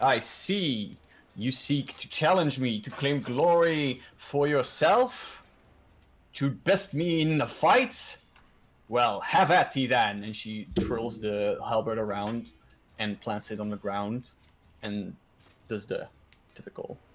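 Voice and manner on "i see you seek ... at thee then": speech broken up by laughter. Voicing a character who laughs and challenges a fighter: laughing in character as Sophia. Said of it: "Sophia, uh, laughs".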